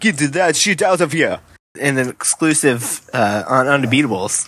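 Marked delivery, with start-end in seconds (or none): 0.0-1.4 put-on French-accented speech. Recounting audio ESPN picked up after a player's block, as Jan Mahinmi in French accent. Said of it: "him in a French accent going".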